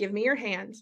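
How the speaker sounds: put-on very gentle tone. Retelling how a partner calmed an interrupting planner: imitating someone speaking very gently. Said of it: "very gently".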